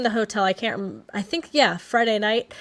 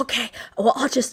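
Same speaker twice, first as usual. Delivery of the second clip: put-on loud whisper; 2 semitones higher than usual. Retelling a late-night talk beside a sleeping baby: imitating a loud whisper. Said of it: "he's whispering the whole time, very loud".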